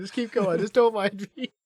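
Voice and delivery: talking through laughter. Urging the other speaker to move along: laughing while talking. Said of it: "while I just keep laughing".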